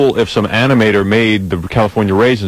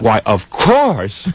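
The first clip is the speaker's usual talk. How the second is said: pleasantly surprised, delighted, happy tone. Retelling a celebrity asked for an autograph: imitating Elayne Boosler, pleasantly surprised. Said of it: "so surprised somebody wanted an autograph".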